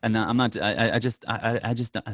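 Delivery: slow, halting stutter, stumbling over the start. Asked whether they would make a rumored trade, the speaker answers, stuttering. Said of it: "I'm stuttering".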